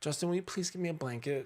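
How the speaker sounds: put-on small, high, pouting child's voice. Retelling how she asked him for a blanket, imitating a little pouty voice. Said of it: "In a like little pouty voice".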